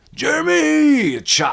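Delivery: put-on very high, shrill, raspy, rough scream. Imitating a friend yelling his own name while chopping wood: imitating Jeremy screaming his name. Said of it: "why is he screaming his name?".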